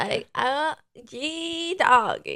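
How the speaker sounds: put-on drawn-out, very slow Southern girl twang. Imitating a bride from the South: imitating a Southern girl. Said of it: "trying to make, like, a Valley girl and Southern girl".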